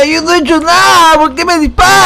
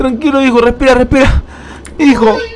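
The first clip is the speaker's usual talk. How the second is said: plain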